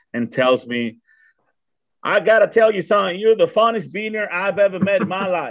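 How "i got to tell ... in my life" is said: put-on, very strong Texan Southern accent, higher pitch. Retelling what an old man told the speaker, imitating a Texan Southern accent. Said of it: "very Texan, Southern kind of accent".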